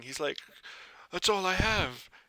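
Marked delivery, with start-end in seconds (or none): 1.1-2.0 high-pitched, pleading moan. Voicing a man being robbed in an alley, moaning. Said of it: "the guy kinda, like, moaning".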